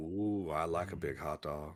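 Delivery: very low, deep, slow, drawn-out put-on voice. Answering a question about hot dog toppings in a Leslie Jordan voice. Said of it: "that was a Leslie Jordan unnecessary voice".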